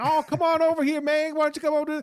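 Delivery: loud, high, put-on Southern accent. Recounting a surprising AI character voice, the speaker imitates a Southern man. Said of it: "the commission A I voice was a Southern guy".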